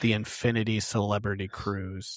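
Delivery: ordinary delivery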